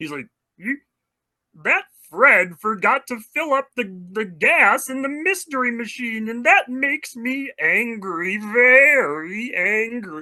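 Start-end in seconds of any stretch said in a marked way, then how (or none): 1.6-10.2 high pitch with "very" stretched out. Demonstrating cartoon voice options for an audience: Marvin the Martian voice. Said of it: "I had to give you guys the voice".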